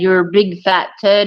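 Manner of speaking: ordinary delivery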